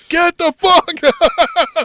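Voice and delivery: very high, very loud, swooping, drawn-out scream. Retelling a wrestling spot, imitating Billy Gunn screaming. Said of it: "Billy Gunn is screaming".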